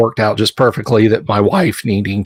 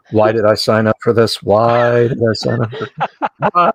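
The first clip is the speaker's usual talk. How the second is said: repeated aside, spoken as if to oneself. Imagining a fellow player after the game, imitating Tammy saying it quietly. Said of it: "sitting over there quietly going".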